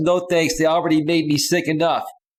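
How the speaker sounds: ordinary talk, nothing marked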